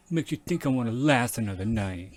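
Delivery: put-on low tough-girl voice. Repeating a performer's line while reviewing her performance, imitating a low tough-girl voice. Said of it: "she's bringing her voice down here".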